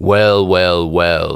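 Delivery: deep, dark, rumbling voice like waves and thunder. Reading a story aloud as an unseen voice addresses a character; deep, dark voice. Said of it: "a deep, dark voice that sounded like waves and thunder said".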